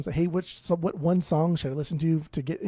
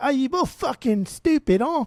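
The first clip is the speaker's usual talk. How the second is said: fake British accent, very high and loud; 9 semitones higher, 5 dB louder than usual. Voicing an imagined reaction to the others' pick, in a mock British accent. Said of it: "we're not even using the right accent".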